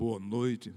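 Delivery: very low, deep baritone voice. Saying good evening the way Cid Moreira does: Cid Moreira voice. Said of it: "mas boa noite só com a voz dele".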